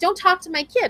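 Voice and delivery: shrill, very high-pitched yell. A parent retelling yelling at a shopper who spoke to their kid, retelling a yell. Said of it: "And I'm yelling".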